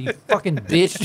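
mock venomous, seething fury, words spat out. Retelling yelling at the dog Kane in the kitchen: imitating own angry outburst. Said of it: "anger was spewing whenever I said".

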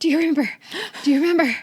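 mock out-of-breath panting, loud, rushed and urgent. Retelling someone coming in from a bike ride: imitating breathless speech. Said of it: "and he's all breathless".

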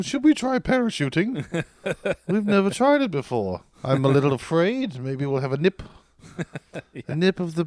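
put-on British accent. Speaker acting out the british guys he is describing, imitating their british accent. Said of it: "they're like".

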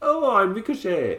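bad put-on Irish accent, very high pitched. Speaker playing a lad who nicked another man's jacket, bad Irish accent. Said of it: "I'm trying to do an American being an Irishman".

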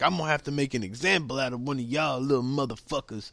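put-on cranky, grumpy, angry old guard voice. Retelling what a mad security guard said to the crowd: imitating an angry security guard. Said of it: "made this one security guard really mad".

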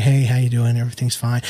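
mimicked soft-spoken male voice. Describing a former coworker, imitating a soft-spoken coworker. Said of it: "He was real soft-spoken".

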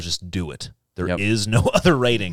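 mock serious put-on voice. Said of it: "Serious voice".

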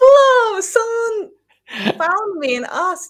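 high, loud amazed gasping exclamation. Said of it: "I'm like".

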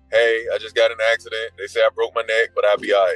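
ordinary talk, nothing marked

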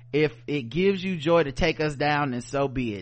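ordinary talk, nothing marked

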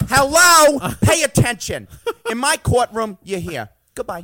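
loud, high-pitched barked delivery. Speaker running through a string of impressions turns next to a Judge Judy impression. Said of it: "And then Judge Judy".

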